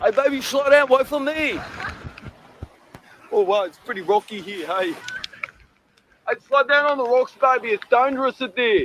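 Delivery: broad bogan Australian accent. In a clip played for viewers, someone calls ahead to their companion: full bogan accent. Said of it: "full bogan there".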